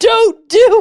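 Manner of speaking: loud screaming. Retelling what an older woman said: imitating someone screaming. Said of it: "screaming at me".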